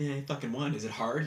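ordinary talk

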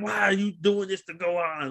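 high, screaming, yelled outburst. Retelling how Piccolo screamed at Goku: imitating Piccolo screaming. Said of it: "he was screaming at Goku like".

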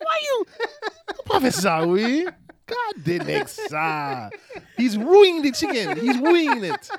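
put-on Haitian accent. Retelling someone's remark about the chicken, in a put-on Haitian accent. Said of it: "said in his Haitian voice".

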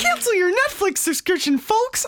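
squeaky cartoon mouse voice. Asked by your co-host to open the episode, Mickey Mouse impression. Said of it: "Can you do a Mickey Mouse impression".

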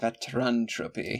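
word said in a vampire voice. Coining a word for someone who turns into a frog, vampire-like voice. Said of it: "Why do I say that like a vampire?".

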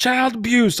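mock very high, all-out scream at top of lungs. Parent retells son's reaction to being disciplined with a belt: imitating son yelling. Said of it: "at the top of his lungs".

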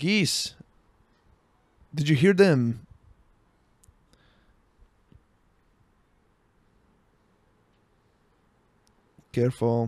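vague, unplaceable continental European accent. Talking to listeners about their notes, the speaker uses a vague European accent. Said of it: "this vague European voice".

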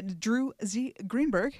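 slow, deliberate, carefully spaced enunciation, each part separate. Naming the episode's writer carefully: said slowly. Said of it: "I have to say it slow like that".

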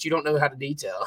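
usual speaking voice

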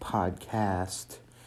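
podcast with punch on second syllable, cast. Welcoming listeners back to the Echolalia podcast: stress on cast in podcast. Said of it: "Maybe if I punch more on the second syllable".

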